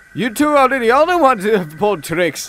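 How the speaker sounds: said with a laugh. One engine answers two twin engines about their tricks, laughing. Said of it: "laughed Douglas".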